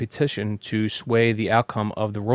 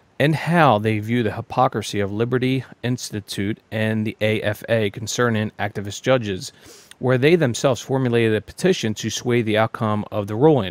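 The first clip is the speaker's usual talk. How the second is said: ordinary delivery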